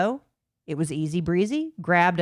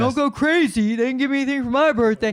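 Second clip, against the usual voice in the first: put-on dumb voice, higher pitch; 6 semitones higher, 4 dB louder than usual. Imitating someone doing a dumb impression of the other speaker: Melissa Hecht doing Big Dumb [name]. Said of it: "doing the impression of Melissa Hecht doing the impression of me being Big Dumb [name]".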